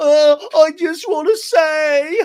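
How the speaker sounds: acted very high, very loud, slow drawn-out whining. Retelling how James mocks a crying castmate: imitating James whining. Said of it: "James makes a whining".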